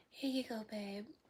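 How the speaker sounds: gentle, soft-spoken, hushed woman's voice. Retelling a girl calling him babe as she hands him something; imitating a woman's soft voice. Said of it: "they say in their soft voice too".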